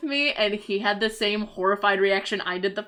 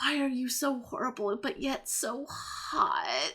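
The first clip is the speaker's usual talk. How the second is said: quiet, very slow muttering to oneself; 3 semitones higher, 8 dB quieter than usual. Retelling talking to oneself about a movie's protagonist: imitating speaking very quietly to oneself. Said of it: "say very quietly to myself".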